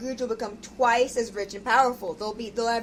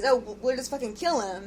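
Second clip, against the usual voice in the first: plain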